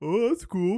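voice sounding as heard over a phone call.

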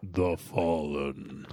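deep, heroic robotic voice. Discussing how the robots would say the name; Optimus Prime impression. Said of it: "my Optimus Prime impression".

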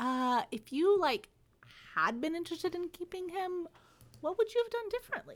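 awkward halting high voice. Acting out a line from a book: awkward Alec voice. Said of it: "I feel like it's very awkward".

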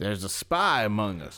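put-on sudden, very slow country accent. Quoting a game line about a spy: sudden country accent. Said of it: "I went country all of a sudden".

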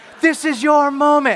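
very loud, very high, drawn-out yell. Retelling what a spin instructor yelled during fast sprints: imitating an instructor yelling. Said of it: "She would yell that".

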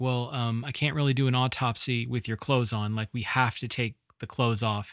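ordinary talk

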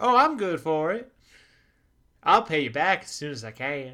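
put-on very loud, high mid-Atlantic transatlantic accent. Acting out a well-dressed stranger asking a shop owner for money: transatlantic accent. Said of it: "with a transatlantic accent?".

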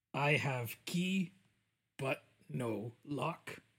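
speaking in broken English. Player in character, saying a riddle to companions: broken-English adventurer voice.

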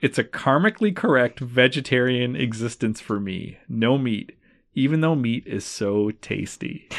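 ordinary delivery

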